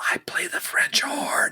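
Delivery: soft, hushed whisper. A narrator voices a character leaning in to whisper in the listener's ear. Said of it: "She whispers in your ear".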